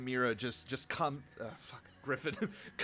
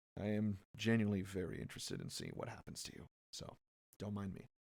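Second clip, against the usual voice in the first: hushed, half-whispered aside; 5 semitones lower, 9 dB quieter than usual. Game master voicing Saltbrook half-whispering to a player's character: Saltbrook half-whispering. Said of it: "he whispers to you and says".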